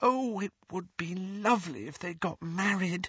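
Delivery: very high, thrilled, ecstatic half-whisper. Narrator voices Lily responding to James, in an ecstatic half-whisper. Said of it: "whispered Lily ecstatically".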